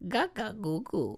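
babbling in a very high, tiny voice. Answering what Baby Yoda's first words were: Baby Yoda voice. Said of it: "That's Baby Yoda".

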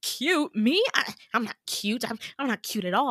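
all flustered, dismissive, brushing it off. Retelling how a guy reacted when called cute, imitating him flustered. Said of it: "he gets like so flustered".

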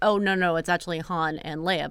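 ordinary talk, nothing marked

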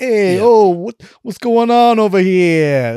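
put-on high, slow New Jersey accent. Praising an actor's performance, mimicking Colin Farrell's New Jersey accent. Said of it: "doing like the kind of like New York, New Jersey accent".

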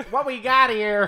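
very loud, very high announcer call. Trying a John Madden impression while others judge it: John Madden impression. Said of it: "You just sound like a guy from the Midwest".

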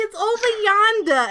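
very high, loud put-on Boston Italian accent. Retelling what a woman said, in her Boston Italian accent. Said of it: "in her Boston Italian accent".

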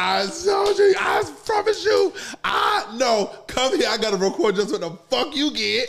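put-on screaming and laughing. Retelling how a friend screamed on the phone: imitating a friend screaming and laughing. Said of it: "He was screaming like".

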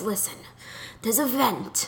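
mock long-suffering, fed-up, exasperated tone. Imitating a man who was always exasperated: imitating someone exasperated. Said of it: "He was just always exasperated, and he'd sound like this".

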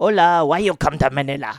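put-on Spanish accent. Redoing the interview question after being told the man is Spanish: put-on Spanish accent. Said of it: "But he's Spanish".

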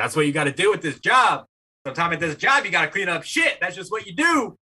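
high-pitched, angry yelling. Retelling how the night manager yelled at them at work, retelling a manager's yelling. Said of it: "is just like yelling at me like".

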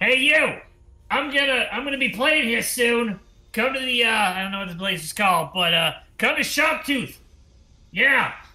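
very high, high-pitched shouted yell. Voicing a character calling to passersby from the Yelling Tower: Sharptooth yelling from a tower. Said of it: "Not to roleplay your character".

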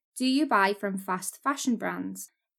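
normal talking voice

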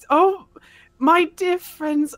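high voice, half-laughing half-crying through tears. Retelling what she said at camp, imitating half laughing, half crying. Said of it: "She's like half laughing, half crying".

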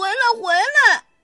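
calling shout, high and loud. The rabbit calls after the little bear heading home: shouting. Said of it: "兔子喊道。".

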